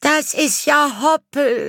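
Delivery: very high, drawn-out shrieking scream. A child recognizes the neighbours' rabbit: screaming. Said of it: "schrie Elli".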